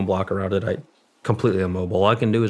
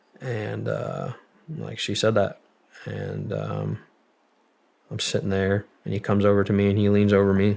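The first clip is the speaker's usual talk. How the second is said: normal talking voice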